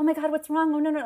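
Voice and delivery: alarmed, anxious voice. Retelling how she found the locked-in speaker: imitating a worried woman. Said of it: "she was so worried".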